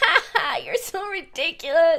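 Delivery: put-on high, passive-aggressive, derisive, mocking fake laugh. Imitating how she laughs at him: imitating a mocking laugh. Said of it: "it's like mocking him".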